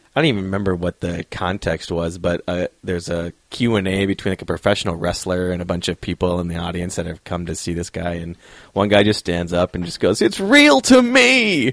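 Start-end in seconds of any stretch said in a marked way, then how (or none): 10.3-11.8 tearful crying voice, very high and very slow. Retelling how an audience member at a wrestler's Q and A stood up: imitating a crying fan.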